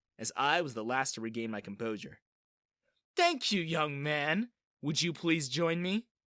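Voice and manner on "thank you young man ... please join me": menacingly sugary, frighteningly sweet politeness. A woman invites the young man who snickered to join her, frighteningly sweet voice. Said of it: "she invited in a frighteningly sweet voice".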